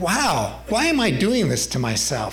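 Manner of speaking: normal talking voice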